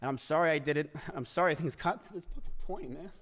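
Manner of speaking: theatrical fake crying with put-on sobs. Reading a scripted apology in a bit; fake crying. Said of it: "that fake ass cry".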